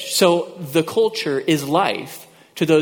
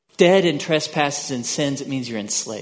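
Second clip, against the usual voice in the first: ordinary delivery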